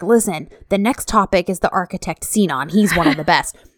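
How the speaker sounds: put-on whisper. Retelling how a man whispered to them about the next topic, retelling a whisper. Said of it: "And he like whispers".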